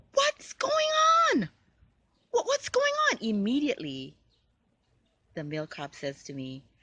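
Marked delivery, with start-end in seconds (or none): 0.2-3.2 frantic, very high, fast rattled-off panicked yell. Retelling a first-ever police encounter, speaker reenacts their own yell. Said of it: "I'm yelling".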